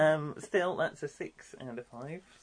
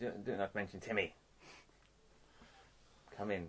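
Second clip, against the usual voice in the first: alluring, seductive, low and soft; 6 semitones lower, 7 dB quieter than usual. In an improvised scene, coaxing the other character into the room, seductive. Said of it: "I'm being seductive".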